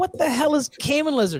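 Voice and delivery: high-pitched, baffled, amazed outburst. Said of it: "I'm like".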